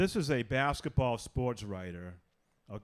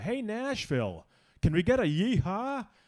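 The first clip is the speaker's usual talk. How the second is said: drawn-out, pitched-up, rousing arena announcer voice; 9 semitones higher, 4 dB louder than usual. Retelling a hockey game announcer's call to the crowd: imitating a PA announcer. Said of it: "the P A announcer goes".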